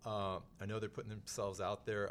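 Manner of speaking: ordinary delivery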